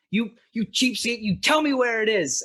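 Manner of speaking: act dropped, very high, very loud, accusing shriek. A woman pointing at a skull suddenly turns on the man: dropping the act. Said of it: "she like instantly drops the act as she says".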